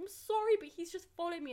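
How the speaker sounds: speaking while bawling through sobs. Answering the head teacher who asked what was wrong, retelling own bawling.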